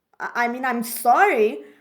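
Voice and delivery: angry, upset yelled outburst.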